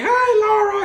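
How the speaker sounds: very high, loud, dopey, crackly nerd voice. Imitating a nerdy guy greeting the girl he loves, stupid crackly voice. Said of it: "really stupid, crackly voice".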